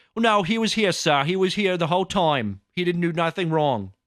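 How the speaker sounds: heavy, really thick put-on English accent. Retelling a school story, speaker quotes LaGuardia answering the principal, thick English accent. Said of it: "a really thick English accent".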